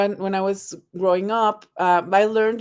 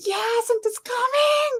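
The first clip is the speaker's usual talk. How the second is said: acted-out thrilled little-kid shriek, very high-pitched. Retelling a daughter's reaction to a call from Santa: imitating a child screaming. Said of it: "she was screaming like".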